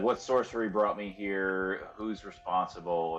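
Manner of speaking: ordinary talk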